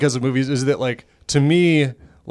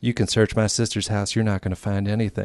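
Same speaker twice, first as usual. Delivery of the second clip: weird, quieter, put-on Southern accent; 4 semitones lower, 7 dB quieter than usual. Recounting a scene from a show, doing Jamie Kennedy's weird southern accent. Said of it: "in his weird southern accent is like".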